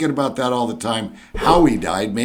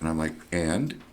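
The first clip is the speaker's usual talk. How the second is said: ordinary talk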